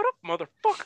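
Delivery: squeaky, very high cartoon voice. Joking that Disney will sue, imagining Mickey Mouse at the door: Mickey Mouse voice. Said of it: "Mickey Mouse is gonna come knocking on my door".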